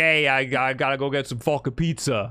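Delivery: put-on Brooklyn accent. Describing how Mario talks outside video games, doing him with a Brooklyn accent. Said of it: "talks he's just a guy from Brooklyn".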